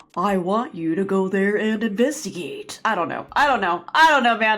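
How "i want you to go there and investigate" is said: very bad, macho tough-guy voice. Asked to do an Anderson impression, she gives a very bad Anderson impression. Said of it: "so I'll do a very bad one".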